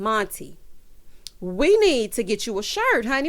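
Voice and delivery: ordinary talk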